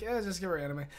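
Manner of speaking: mock-bored, dismissive. Describing how people reacted to Melanie, imitating bored people. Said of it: "they seem very bored".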